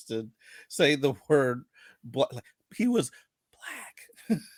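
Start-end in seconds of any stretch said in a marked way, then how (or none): 2.8-4.4 guarded, hushed, quiet whisper.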